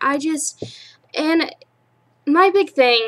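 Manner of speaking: slow, stumbling stutter, tripping over words. Speaker ranting about a mistake they can't comprehend, stuttering. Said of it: "I'm so stuttering".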